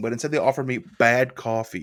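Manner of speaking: plain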